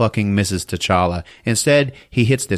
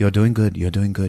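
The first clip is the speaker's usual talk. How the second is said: calm heroic put-on voice; 3 semitones lower than usual. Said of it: "a nice, calm voice".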